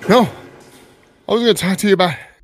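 winded, out of breath speech between pants. Answering a co-host who notices they are still out of breath: out of breath. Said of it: "You're still out of breath?".

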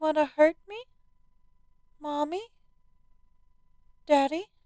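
put-on small child voice, very high. Narrator reading a girl's words to her parents: childlike voice. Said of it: "She said with a voice like a child's".

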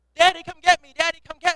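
put-on very loud, high, frantic, panicked child's cries. Retelling a girl stuck in McDonald's play tunnels, imitating a panicking child. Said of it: "Starts panicking".

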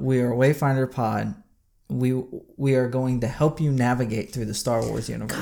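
ordinary delivery

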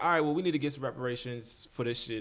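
ordinary delivery

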